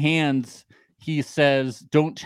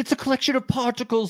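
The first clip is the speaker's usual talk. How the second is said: very high, put-on British accent; 10 semitones higher than usual. Quoting Inez explaining what love is, in a British accent. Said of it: "sorry, I'm doing a British accent".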